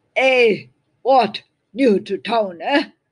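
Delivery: very loud, rough-voiced shout. A stranger in the crowd calls out to a newcomer, rough voice. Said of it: "Called out a rough voice".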